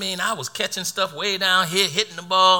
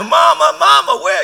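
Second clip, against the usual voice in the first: put-on child's crying, higher pitch; 8 semitones higher, 6 dB louder than usual. Speaker retells being ten and waiting for a bus, retelling crying as a child. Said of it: "I'm crying".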